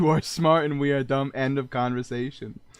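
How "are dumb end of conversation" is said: ordinary talk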